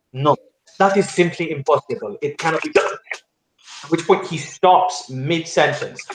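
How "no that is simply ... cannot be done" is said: strongly emphatic, insistent, every word pressed. Describing a scene, quoting a character's flat refusal: quoting an emphatic refusal. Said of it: "in a very kind of emphatic term".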